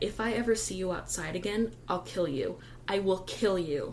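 ordinary delivery

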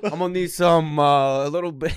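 put-on Italian accent. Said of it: "Really ramping up the Italian accent".

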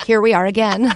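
ordinary talk, nothing marked

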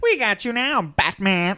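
bad, loud, drawn-out villain bellow, slow and deliberate. Joking about a new villain in a Batman movie, imitating the Joker. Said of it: "that's what he sounded like".

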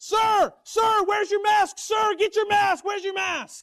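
very high, very loud, shrill piercing scream. Retelling how a woman at a podium screamed at a man without a mask, imitating a woman screaming. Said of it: "She begins screaming".

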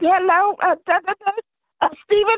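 very high, sweet voice, way up top. Retelling how the interviewer greets him: imitating a real high voice. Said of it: "She got that real high voice on the interview".

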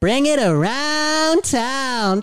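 very high, very slow cartoon voice, town drawn out. Retelling a high school impressions act, doing SpongeBob. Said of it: "I did SpongeBob".

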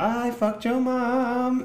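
mock high, slow, taunting German kid voice.

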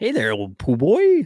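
put-on storybook cartoon bear voice. Practicing the voices from the Pooh books with a friend, Pooh cartoon character voice. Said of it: "do the voices".

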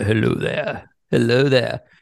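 groggy morning-after voice. The morning after cigars and drinks, saying hello in a groggy cigar voice. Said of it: "groggy cigar voice".

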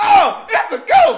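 very high, loud, slow, drawn-out hollering cry. Retelling people on the boat seeing Jesus on the water: imitating people hollering. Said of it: "Everybody get to holler".

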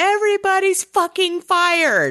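mock, very high, all-out screaming outburst. Retelling a movie scene where the chief reacts: imitating someone screaming. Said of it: "it just starts screaming".

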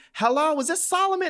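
mock, very high, shrill screaming yell. Retelling a delivery caller's phone call: imitating someone screaming on the phone. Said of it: "he was screaming in the phone".

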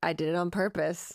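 ordinary delivery

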